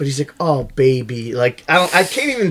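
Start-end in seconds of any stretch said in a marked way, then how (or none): 0.4-1.3 put-on cheesy, uncharming flirty voice. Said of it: "the least charming you've ever heard".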